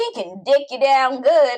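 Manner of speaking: put-on country accent. Repeating another speaker's crude phrase back: imitating in a country voice. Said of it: "Now I sound country".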